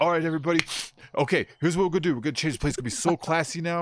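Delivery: put-on New York accent. Retelling what a coked-up boss said on his first day: imitating a new york accent. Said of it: "He was from New York. He had this accent".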